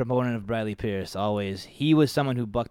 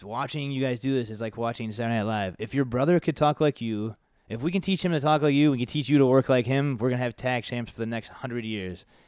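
plain

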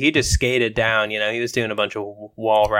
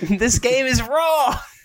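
put-on screaming voice, higher pitch. Acting out a character yelling like Gordon Ramsay: Gordon Ramsay voice. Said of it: "Gordon Ramsay".

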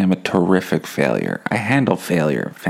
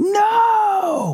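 mock very high yell, "No" stretched long. Acting out a panicked moment at the mess hall: imitating his own yelling. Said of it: "Why are you yelling at me?".

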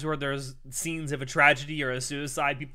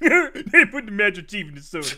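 goofy, silly put-on voice, high and swooping; 6 semitones higher, 7 dB louder than usual. Repeating the joke line for the amused listener, in a stupid voice. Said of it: "It's that stupid voice".

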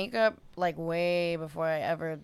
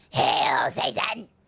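deep, low, loud, belted devilish cry; 4 semitones lower, 5 dB louder than usual. Answering a request to perform a put-on demonic voice: Satan impression. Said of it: "Can we hear the Satan impression?".

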